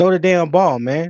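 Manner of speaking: mild, held-back yelling. Retelling what they yell at the TV while watching: imitating own screaming at the TV. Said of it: "I be in here screaming at the T V like".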